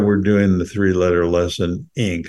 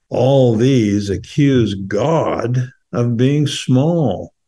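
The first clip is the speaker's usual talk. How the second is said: slow, thoughtful, poetic recitation style. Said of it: "we're gonna try to read it slowly".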